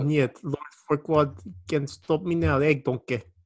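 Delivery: ogre voice in a Russian accent. Joking around with a friend, saying the line as a Russian Shrek voice. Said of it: "it has to be a Russian Shrek".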